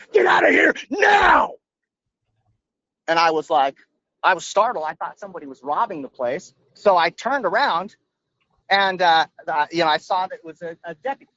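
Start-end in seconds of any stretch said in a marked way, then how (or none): 0.1-1.5 mock shrill, very high, top-of-the-lungs scream. Recounting a deputy running around the corner at them, retelling a scream. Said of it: "screaming at the top of his lungs".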